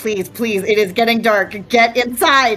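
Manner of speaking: put-on nervous, anxious, pleading children's voices. Voicing nervous kids hurrying guests indoors as it gets dark: nervous kids urging. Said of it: "The kids start getting a little nervous".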